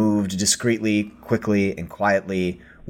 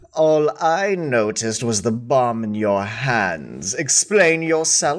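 pompous, haughty, superior, self-important tone; 4 semitones higher than usual. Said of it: "with a very pompous expression".

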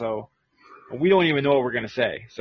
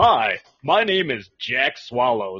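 cheesy, game-show-style news anchor voice; 4 dB louder than usual. Explaining the funny voices they practiced yesterday, in a newscaster voice. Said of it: "practicing in my newscaster voice".

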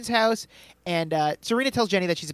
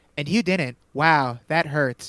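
put-on monotone at a lower pitch; 3 semitones lower, 3 dB louder than usual. Retelling a show scene where a character answers Dan, imitating Willa's monotone reply. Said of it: "In like the most monotone voice ever".

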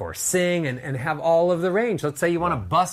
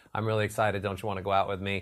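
very low, flat one-note monotone drone; 8 semitones lower, 7 dB quieter than usual. Showing speech like a piano with only one note: flat one-note monotone. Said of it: "So monotone".

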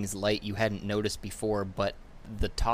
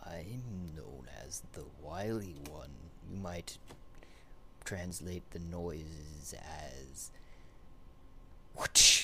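creaking low voice, lower and quieter; 4 semitones lower, 7 dB quieter than usual. Voicing a tree answering a whisper: low creaking tree voice. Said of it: "a bit of a creaking low".

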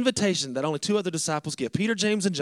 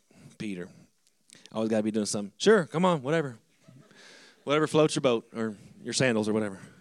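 casual, offhand, tossed-off delivery; 8 semitones lower than usual. Retelling the story of Peter walking on water, as Jesus: imitating Jesus. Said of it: "I picture it more like Jesus like".

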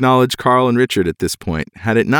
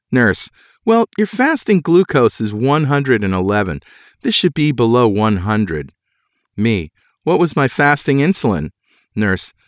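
ordinary talk

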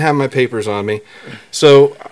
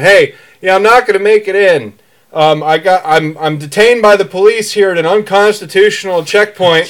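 loud yelling with raised pitch; 5 semitones higher than usual. Retelling a call to a boss during a police stop: imitating own yelling into phone. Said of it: "I'm yelling into the phone".

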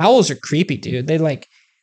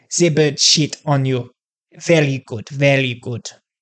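clumsy, bad, put-on fake Russian accent; 3 semitones lower than usual. Reading out a Russian superstition about birds, in a bad Russian accent. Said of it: "I need to work on my Russian accent".

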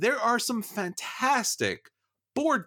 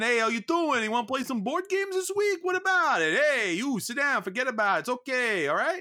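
New York accent impression; 7 semitones higher than usual. Showing off one of several well-practiced voices: put-on New York accent. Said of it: "I have my New York accent".

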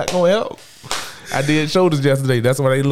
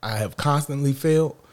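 ordinary talk

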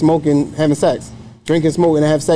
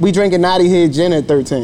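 ordinary talk, nothing marked

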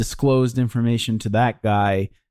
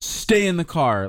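mock commanding tone, higher; 7 semitones higher than usual. Retelling a movie character's line, imitating commanding a dog. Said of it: "Like he's commanding a dog".

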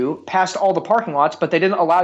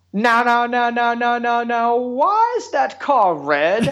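put-on very slow, high, childlike protesting voice; 6 semitones higher than usual. Impersonating his son asking why a car is red: imitating a young son. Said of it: "your impersonation of your sons".

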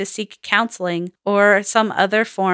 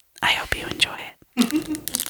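mock ASMR host voice, higher and quieter; 7 semitones higher, 6 dB quieter than usual. Joking about what the new microphone could do: put-on ASMR voice. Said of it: "I could just go like".

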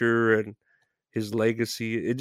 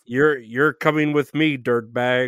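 mock robotic police voice. Trying out a sign-off line in an impression-off: Robocop voice. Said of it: "that's Robocop".

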